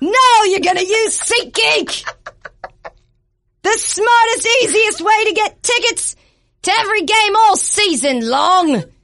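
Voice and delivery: very high, rousing, rallying battle cry. Host reading an ad as a Braveheart-style freedom speech, yelling like William Wallace. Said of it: "You're supposed to yell".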